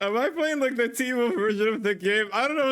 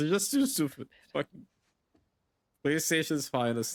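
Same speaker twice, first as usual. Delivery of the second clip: talking through laughter, words broken up; 7 semitones lower, 5 dB quieter than usual. Reacting to a game scene with dialogue, laughing while talking. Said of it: "I'm sorry for laughing over this".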